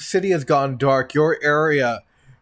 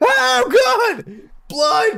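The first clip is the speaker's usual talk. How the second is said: very high, panicked screaming; 4 dB louder than usual. Voicing panicked townsfolk after an explosion: screaming in panic. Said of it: "you hear the screaming of other parishioners".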